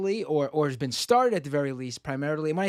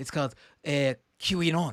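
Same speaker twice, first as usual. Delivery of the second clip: bad, mangled put-on Canadian accent. Naming what it's called in canada: bad put-on canadian accent. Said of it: "I'm gonna really massacre this accent".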